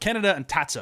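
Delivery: names said in flat, full American accent. Naming anime characters kaneda and tatsuo: full american pronunciation. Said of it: "I'm gonna go full American on these pronunciations".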